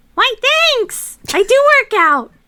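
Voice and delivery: very high, loud put-on game-character voice. Voicing a game companion who has lost half his health, in a high-pitched character voice. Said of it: "He's like real high pitched".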